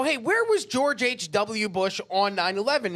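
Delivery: ordinary delivery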